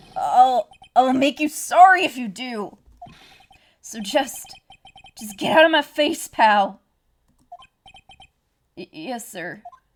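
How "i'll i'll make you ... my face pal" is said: scary, threatening tough-guy voice. Voicing Detective Gumshoe's dialogue, scary Gumshoe voice. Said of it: "Detective Gumshoe's kinda scary today".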